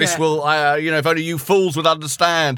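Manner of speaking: put-on, lunatic mad-professor, mad scientist voice. Guessing what the film's professor would say: imitating a mad professor. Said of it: "he's like a mad professor".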